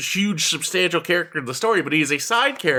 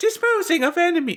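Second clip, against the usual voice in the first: put-on very high, tiny small-child voice; 12 semitones higher than usual. Talking about making a game character sound like a child: small child's voice. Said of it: "small child's voice saying".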